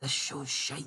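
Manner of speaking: joking whisper. Telling the viewers what to whisper, joking: joking whisper. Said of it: "You know what I'm gonna whisper".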